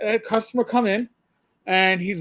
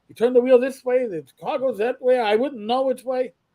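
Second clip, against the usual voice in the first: put-on New York Yiddish accent; 3 semitones higher than usual. Slipping into an accent at a bargain table to impress a girl, Jackie Mason Yiddish accent. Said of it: "I slipped into a Yiddish accent".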